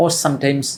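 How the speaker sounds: plain reading voice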